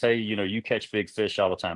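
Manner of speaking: ordinary delivery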